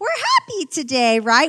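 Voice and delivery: put-on fake-happy voice, high and swooping. Showing a thin veneer of happiness at christmas, fake high-pitched voice. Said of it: "With that like fake high-pitched voice".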